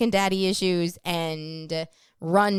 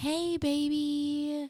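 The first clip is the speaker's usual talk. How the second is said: very high, gentle, soothing, reassuring coo; 9 semitones higher, 6 dB quieter than usual. Explaining the voice men use with girlfriends, demonstrating a soothing girlfriend voice. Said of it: "a higher pitched tone that is soothing".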